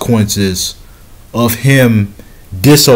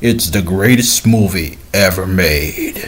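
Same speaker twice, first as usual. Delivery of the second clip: deep, hushed, pronouncing movie-critic voice; 3 semitones lower, 5 dB quieter than usual. Retelling how people praised a movie, mimicking that movie critic voice. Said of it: "that critic voice".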